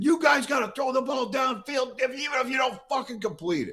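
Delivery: acted, shrill, very high-pitched, loud scream. Recounting screaming from behind the bench to the offensive line coach, retelling own screaming. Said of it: "I'm screaming".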